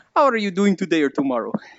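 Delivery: goofy, exaggerated put-on Polish accent. Speaker explains how certain phrases sound in friends' voices, Aiko's dumb Polish accent. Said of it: "in my friend Aiko's dumb Polish accent".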